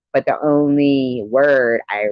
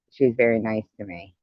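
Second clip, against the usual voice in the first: ordinary delivery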